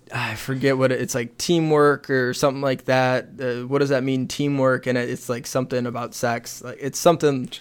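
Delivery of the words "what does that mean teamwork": normal talking voice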